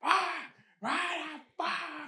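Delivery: put-on shrill, high, long drawn-out screaming. Retelling how an old neighbor screamed into the night: imitating someone screaming. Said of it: "and just scream into the night".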